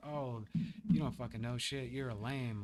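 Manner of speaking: ordinary talk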